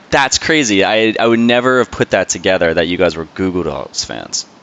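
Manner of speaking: ordinary talk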